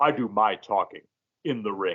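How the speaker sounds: voice dropped to its deepest. Recalling a film character's line, quoting it in the deepest voice. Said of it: "says in just the deepest voice".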